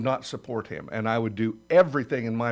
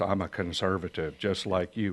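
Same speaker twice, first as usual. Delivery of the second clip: deep, low, slick, polished campaign-ad announcer voice; 4 semitones lower, 4 dB quieter than usual. Mocking an opponent's slick campaign ads: imitating John Cornyn's deep ad voice. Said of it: "That deep voice".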